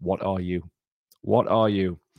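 ordinary talk, nothing marked

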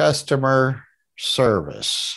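very slow, stretched words. Retelling reading a customer service sign aloud: imitating own very slow reading. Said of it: "like that, real slow".

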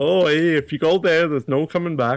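acted Irish accent, laid on thick.

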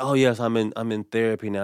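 acted, self-satisfied, smug, show-off bragging tone. Mocking people who talk about going to therapy: imitating a smug boast. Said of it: "they say it in such a, like, it's su-, I'm so cool".

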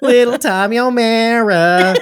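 Staten Island accent. Calling out to a kid named Tommy: put-on Staten Island accent. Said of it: "from Staten Island?".

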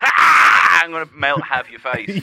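put-on, very drawn-out, slow, loud angry snake voice. Acting out how a snake reacts to an alarm: imitating an angry snake. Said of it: "a snake hears that and, like".

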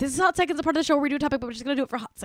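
very fast rattled-off speech. Redoing a show segment intro in another take: very fast speech. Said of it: "I'm going to try to do it really fast".

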